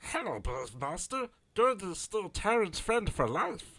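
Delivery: very high-pitched, loud, belted creature voice. Playing a game, the speaker voices a character again: Gurgi's voice. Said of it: "I get to do Gurgi's voice again".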